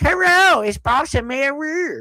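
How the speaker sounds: put-on cartoonish Chinese accent, high pitched. Recalling a voiceover made for a video about Mayor Wu, in a South Park Chinese voice.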